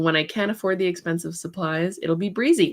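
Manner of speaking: plain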